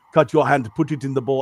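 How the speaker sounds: put-on accent from the Bahamas. Retelling a maid's line from a show they were watching, in a Bahamian accent. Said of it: "the guy's doing the same accent I do".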